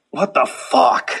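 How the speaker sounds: pissed-off, angry cursing outburst. Acting out stepping on a speck of cocaine: acting pissed off. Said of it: "pissed off".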